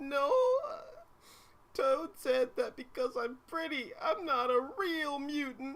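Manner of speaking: very high, sobbing fake cry. Acting a scene where Kitty Pryde, asked why she is crying, answers: fake crying. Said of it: "that fake cry".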